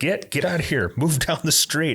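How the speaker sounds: put-on, mock screaming. Retelling a shopkeeper with a hose ordering a man off the sidewalk: imitating a shopkeeper screaming. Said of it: "just screaming at him".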